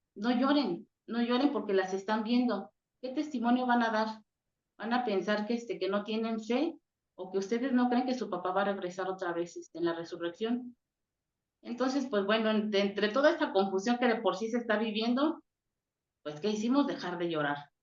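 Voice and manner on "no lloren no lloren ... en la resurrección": ordinary delivery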